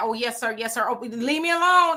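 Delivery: mock-fearful, pleading put-on frightened man voice. Describing a man confronted at his truck, imitating a frightened man. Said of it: "you can hear the fear in his voice".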